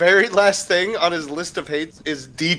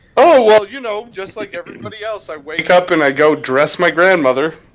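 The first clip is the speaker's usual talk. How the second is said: loud, mock casual, matter-of-fact, unbothered and offhand; 5 dB louder than usual. Picturing how someone else said it: imitating a nonchalant tone.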